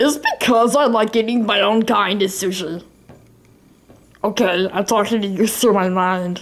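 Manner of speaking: goofy, silly talking-fish character voice. While playing Flappy Bird, answering a question in character: talking as a fish. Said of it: "Why are you talking like that?".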